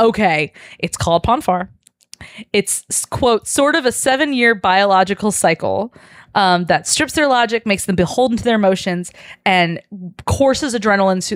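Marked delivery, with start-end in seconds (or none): none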